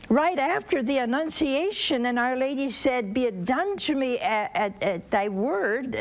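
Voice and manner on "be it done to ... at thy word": ordinary talk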